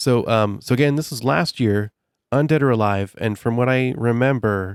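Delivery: ordinary delivery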